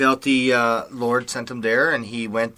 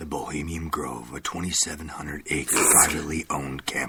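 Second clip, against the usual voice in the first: very low, hushed, soft ad-read voice; 8 semitones lower, 8 dB quieter than usual. Presenting the Bohemian Grove in a special advertising voice, talking soft. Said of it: "You're talking so soft".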